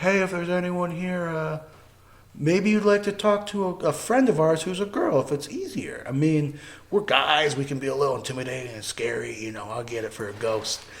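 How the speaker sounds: mild, soft, gentle fatherly dad voice. Imitating a friend talking to ghosts: imitating a gentle dad voice. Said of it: "gentle dad voice again".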